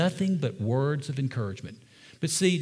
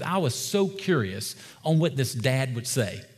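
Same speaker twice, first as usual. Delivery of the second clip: plain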